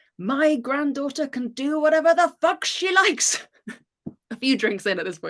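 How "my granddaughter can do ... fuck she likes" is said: put-on roaring, booming old man's voice, very high. Retelling how her grandfather shouted up from the bottom of the staircase, retelling grandfather's booming roar. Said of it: "my grandfather's booming voice roaring".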